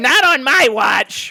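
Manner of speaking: whining, very high and very loud. Mocking a character who whines about young adults, in a whiny Professor X voice. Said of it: "what Professor X's voice is like".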